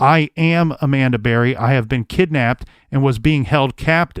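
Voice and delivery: ordinary talk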